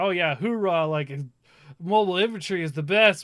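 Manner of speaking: mock sarcastic cheering. Retelling a game's soldier line: imitating a sarcastic soldier cheer. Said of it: "saying this in utter sarcasm".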